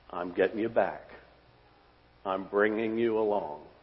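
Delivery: tender, gentle delivery. The speaker recounts god's words to a disciple, retelling tender words. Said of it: "the Lord just tenderly says".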